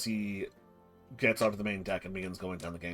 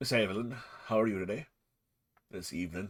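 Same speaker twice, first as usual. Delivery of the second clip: put-on pirate-like North Country English accent. The narrator voices Captain O'Neill greeting Miss Evelyn: Captain O'Neill's North Country accent. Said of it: "He's North Country, therefore he sounds kind of like a pirate".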